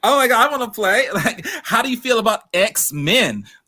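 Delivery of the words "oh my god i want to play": thrilled, eager, fast excited gush. Retelling how a woman reacted, imitating an excited woman. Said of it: "she looked so excited".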